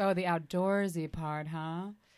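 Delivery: ordinary talk, nothing marked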